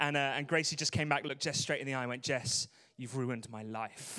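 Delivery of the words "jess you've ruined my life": mock-sassy tone, much slower. Retelling what she said after coming back: retelling a sassy line. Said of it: "this kind of level of sass".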